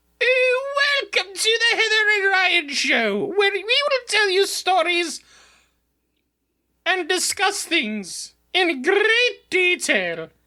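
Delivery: very high, put-on, finest British accent. Challenged by a co-host in a competition, speaking in your finest british accent. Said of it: "In your finest British accent".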